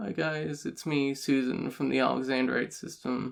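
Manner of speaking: shy, quiet mumbled delivery. Recalling an old video made at twelve, imitating their own muttered intro.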